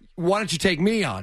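plain

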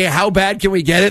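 normal talking voice

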